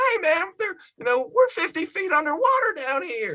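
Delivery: terrible put-on host voice, very high, wide-swinging pitch.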